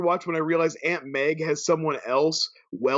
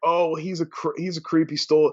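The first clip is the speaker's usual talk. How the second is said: ordinary talk, nothing marked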